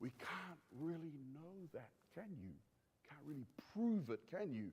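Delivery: barely audible, very quiet, soft half-whisper. Explaining what Hume quietly does, acting out his doubt: half-whispering as Hume. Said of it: "He whispers".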